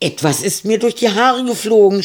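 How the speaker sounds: shrill, very high, loud, frightened scream. Reading Annika's cry while groping through a dark tunnel, screaming in fear. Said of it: "schrie Annika. Die Angst war in ihrer Stimme zu hören".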